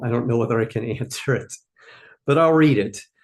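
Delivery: amused words broken by laughing, talking through laughter. Reacting to the first question received: laughing while talking. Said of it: "I'm laughing at the first question I got".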